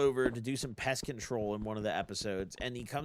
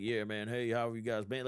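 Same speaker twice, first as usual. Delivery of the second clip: put-on country accent; 4 dB quieter than usual. Showing how the character talks in the new King of the Hill season: Boomhauer with a country accent. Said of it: "he just has like a country accent".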